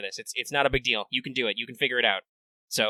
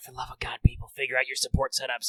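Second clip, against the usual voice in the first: furious whisper, quieter; 4 dB quieter than usual. Speaker reading aloud a line they wrote, as an angry whisper. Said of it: "I'm imagining I'm I'm angrily whispering it".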